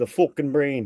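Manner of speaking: put-on Irish accent. Joking with friends about a ruined brain: Irish accent. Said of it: "Saying that with an Irish accent".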